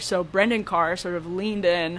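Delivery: normal talking voice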